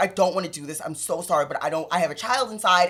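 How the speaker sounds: put-on crying voice. Retelling what a woman said when made to take someone to ICE: retelling a crying plea. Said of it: "And she's crying".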